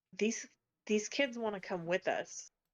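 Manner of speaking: hushed, quiet tone. A player's character scoots into the group huddle and speaks: lowered voice. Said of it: "just lower my voice".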